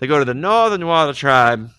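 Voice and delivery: loud, high, clumsy put-on Newfoundland accent. Summarizing a story's plot, in a bad newfoundland accent. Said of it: "My Newfoundland accent".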